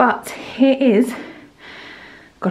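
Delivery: breathless voice. Filming a bump update just after running down the stairs, out of breath. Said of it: "I'm so out of breath, I just ran down the stairs".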